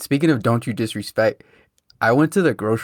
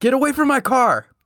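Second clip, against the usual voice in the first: mock very high, loud, hostile, aggressive yell; 12 semitones higher than usual. Describing two men arguing between two cars, quoting one: retelling a loud aggressive yell. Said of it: "like loud and aggressive".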